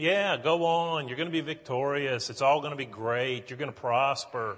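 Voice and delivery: put-on sarcastic tone. Retelling the prophet Micaiah's answer, speaker delivers a retelling of a sarcastic reply. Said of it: "that's exactly what we have here".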